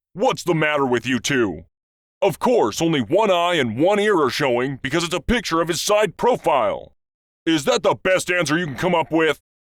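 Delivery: acted-out angry policeman voice. Telling a joke, the policeman answers the first two guys, mock-angry policeman. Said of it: "The policeman angrily responds".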